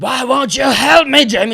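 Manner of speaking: very loud, very high screaming yell. Retelling how a character yells at a girl: imitating Loomis yelling. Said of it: "he's just yelling at her and say".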